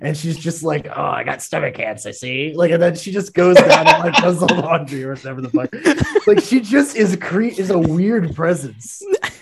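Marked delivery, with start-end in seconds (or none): 0.9-2.5 creepy, sneering witch voice. Imitating a housekeeper in a movie who comes in with a witch-like sneer. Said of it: "this, like, witch-like sneer".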